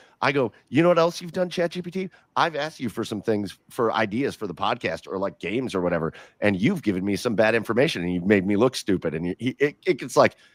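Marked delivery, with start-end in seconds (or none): none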